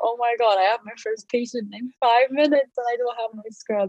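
words spilling out in sheer, frantic panic. Recalling finding their scrubs missing before their first patient, retelling panicked words. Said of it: "I was panicking like crazy".

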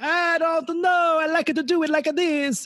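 put-on high-pitched, slow, strong Italian accent. Retelling his reply after being asked for less Super Mario, in Super Mario voice. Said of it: "a little less Super Mario".

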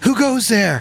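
mild called-out voice. Voicing a ship captain calling through the rain: shouting challenge. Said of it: "Anya shouts out".

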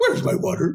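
very high-pitched cartoon dog voice. Retelling first trying out a cartoon impression, Scooby-Doo voice. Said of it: "oh, I can do Scooby-Doo".

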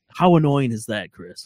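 normal talking voice

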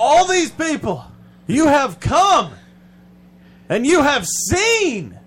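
very high, loud, swooping preacher cadence, words stretched. Mocking how speakers address a crowd of religious people, in a preachy pastor voice. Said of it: "they go into that like pastor voice".

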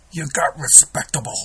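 put-on Irish accent with New York sound. Retelling a Rocky scene, delivering Mickey's line in a New York Irish accent. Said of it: "I do it my best Irish, New York Irish accent".

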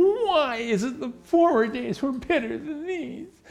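very high, whiny, complaining tone. Reading an old saying as it was originally said: whiny tone. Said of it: "it has to be kind of whiny".

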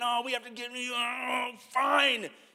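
mock very slow grumble, "oh" stretched long. Retelling how the others complained about coming back: imitating griping. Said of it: "they were just griping".

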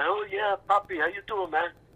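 put-on New York Puerto Rican accent. Retelling meeting a writer after a play: Nuyorican accent. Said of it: "I'm doing this New Yorican thing".

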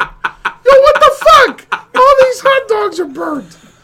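very high, shrill, loud, booming shout. Redoing the burnt hot dogs complaint after being corrected: imitating Kevin. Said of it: "you're right".

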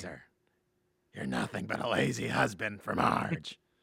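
rough, scraping, creaky put-on cartoon voice. Doing an impression for the other speaker: Patty and Selma impression. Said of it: "That's my best Fatty and Selma".

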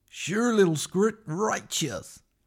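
creepy cartoon character voice. Mashing up Finding Nemo and Monsters, Inc. for a movie-impression bit, creepy-uncle Crush impression. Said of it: "Like a creepy uncle".

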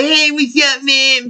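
grating, very high, slow, drawn-out annoying voice. Describing an actor from a film, the speaker imitates his really annoying voice. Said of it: "really annoying voice".

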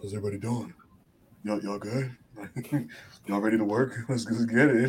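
grand, showy big-star style delivery. Imagining him casually greeting everyone as he walks in: imitating Roman Reigns. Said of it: "Just being Roman".

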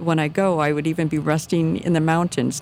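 plain

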